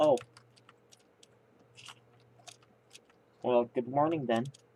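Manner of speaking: speaking with full mouth. Streamer greeting a viewer who just woke up, talking with mouth full. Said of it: "I'm talking with my mouth full".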